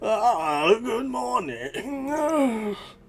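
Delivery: put-on very old, wheezy voice. Describing a scene to listeners, a voice from behind calls a greeting: very old, wheezy voice. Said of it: "a very old, wheezy voice calls".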